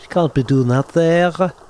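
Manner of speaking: put-on high Scouse accent. Voicing a woman character who speaks at the player, Liverpool accent. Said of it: "I think of like Liverpool".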